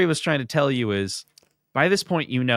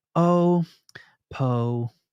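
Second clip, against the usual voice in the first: put-on soothing, gentle cooing voice; 3 semitones higher than usual. Retelling a director's cut where she calms a crying baby, imitating soothing a baby. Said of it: "trying to calm it down".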